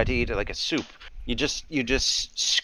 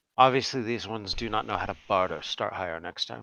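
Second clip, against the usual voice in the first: hushed, very quiet murmur under the breath; 3 semitones lower, 5 dB quieter than usual. Game master voices Nothlisk speaking to the ink seller as players leave: Nothlisk murmuring very quietly. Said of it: "murmur to the person that sold you the ink very quietly".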